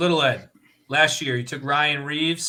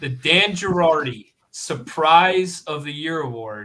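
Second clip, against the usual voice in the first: slow, deliberate, unhurried, word-by-word reading; 3 dB louder than usual. Announcing the next award slowly so the other person has time to pick; speaking slowly. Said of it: "so I'll say it slow".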